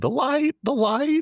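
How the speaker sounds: slow, stretched-out, very high scream. Acting out what a character would do when too high: imitating someone screaming. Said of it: "He just starts screaming".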